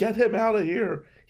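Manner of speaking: mild, toned-down acted yell. Retelling how a fired client screamed demands: imitating a client screaming. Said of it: "he's screaming at me".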